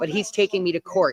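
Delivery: ordinary delivery, nothing marked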